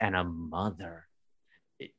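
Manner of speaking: slow, low, soft solemn reading, like a sacred inscription.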